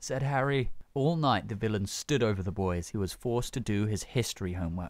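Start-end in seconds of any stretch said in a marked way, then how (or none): none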